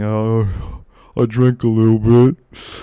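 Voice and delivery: very slow, drawn-out mumble. Retelling an answer to a nurse's question in the ER: imitating own mumbling.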